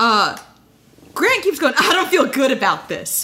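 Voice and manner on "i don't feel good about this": mock laughing, chuckling delivery, smile audible. Retelling a contestant's words, imitating someone smiling and laughing. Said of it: "you can hear that I'm smiling and laughing when I say that".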